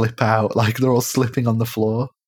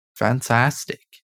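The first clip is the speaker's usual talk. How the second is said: bad, terrible put-on Australian accent. Chatting about a show's finale, a speaker replies in a terrible Australian accent. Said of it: "That was my terrible Australian accent".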